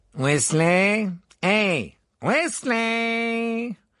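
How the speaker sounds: loud, resounding, ringing high call, one word drawn out. A narrator reads a voice calling out behind Harry, Ron and Hermione, loud and ringing. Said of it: "une voix sonore retentit".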